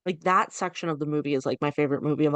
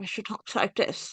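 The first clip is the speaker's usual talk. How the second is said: put-on British accent, quieter; 4 semitones higher, 6 dB quieter than usual. Praising her, the speaker mimics how she talks: imitating her British accent. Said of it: "beautiful British accent".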